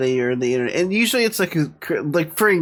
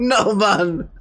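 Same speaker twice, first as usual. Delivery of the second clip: fake Jamaican accent, pitched up; 6 semitones higher than usual. Retelling a mistyped text reply to a mom: fake Jamaican accent. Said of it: "a fake Jamaican accent".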